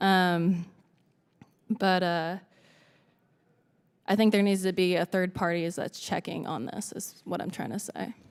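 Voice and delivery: emotional, choked-up voice catching. Speaker testifying about investigating officers' conflicts of interest, voice choking up. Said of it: "I'm being really emotional right now".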